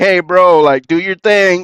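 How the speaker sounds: put-on holler. Retelling what Pizarro hollered at a player: imitating Pizarro hollering. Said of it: "Pizarro had hollered at him".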